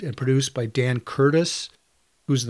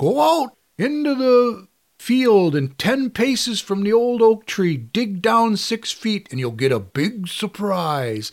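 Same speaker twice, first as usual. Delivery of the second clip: put-on creepy, eerie old man voice, pitched up; 8 semitones higher, 4 dB louder than usual. Quoting the creepy old man in a TV segment: John Carradine voice. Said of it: "You're doing the voice".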